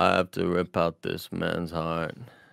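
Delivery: very slow, creaky, rough, drawn-out tough-guy voice. Repeating the movie line when asked: Vin Diesel impression. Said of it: "You sound like Sylvester Stallone from Rambo".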